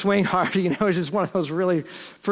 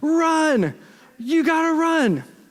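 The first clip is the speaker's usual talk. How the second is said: mock very high, very slow drawn-out yell; 10 semitones higher than usual. Retelling another coach yelling from the dugout: imitating someone yelling. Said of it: "I can hear him yelling".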